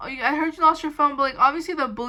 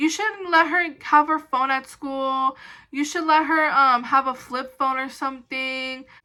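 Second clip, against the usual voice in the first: rude, scolding, lecturing tone. Retelling how the school office lady talked to the speaker's mom, imitating rude scolding. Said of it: "like being like super rude".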